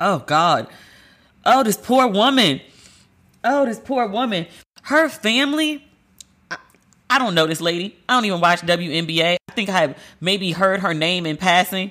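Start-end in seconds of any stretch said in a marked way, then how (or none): 1.5-5.9 high, slow voice near tears. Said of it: "I can't even read the letter without crying".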